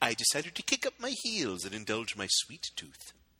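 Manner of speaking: low, swooping-pitch cartoon tycoon voice. Having another go at a Mr. Burns impression after asking if it sounded decent: Mr. Burns voice. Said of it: "Did it sound like a decent Mr. Burns?".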